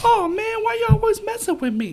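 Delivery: put-on very high, loud, childish baby voice. Recalling a short kid from the past, the speaker imitates Giovanni's baby voice. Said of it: "he had a voice like this".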